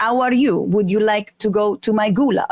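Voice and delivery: put-on Italian accent, dropping the H sound. Showing how to say a greeting without the H: Italian accent. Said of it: "there's no H in Italy".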